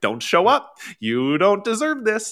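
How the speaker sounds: high, loud, nagging little inner voice. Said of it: "it's that little voice that's like".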